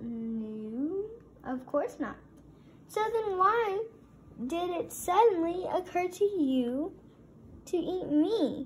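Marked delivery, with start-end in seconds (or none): 2.9-8.7 insistent, demanding, pitched-up voice. A narrator reads a donut questioning the one who wants to eat it: demanding. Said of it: "Arnie demanded".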